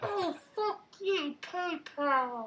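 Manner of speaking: very high, very slow, drawn-out woman's voice. Doing a bit in a put-on voice: put-on woman's voice. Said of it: "I do a good woman".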